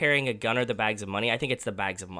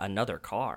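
inquisitive, wondering tone with questioning inflection; 6 dB quieter than usual. Retelling a character's line from a film: imitating an inquisitive inflection. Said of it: "his inflection at that one is".

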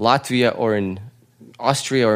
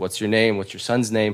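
ordinary talk, nothing marked

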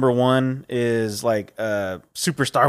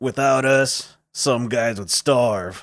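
put-on commercial announcer voice. Retelling an old burger commercial line: imitating the Carl's Jr. commercial guy. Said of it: "that dude and he'd be like".

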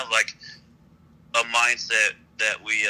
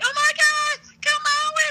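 put-on very high, excited, girly gushing voice. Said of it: "how girls are like".

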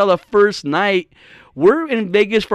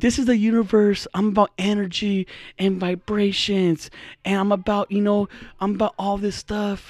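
put-on sultry, seductive voice; 6 dB quieter than usual. Describing how a woman talks, imitating her porn voice. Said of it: "she has a porn voice".

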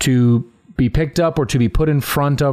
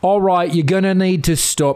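high-pitched, badly faked British accent; 7 semitones higher than usual. Retelling the club's creepy owner or manager telling them to stop, in a bad British accent. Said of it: "He had a bad British accent".

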